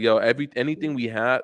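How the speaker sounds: ordinary delivery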